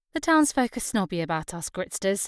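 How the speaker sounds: usual speaking voice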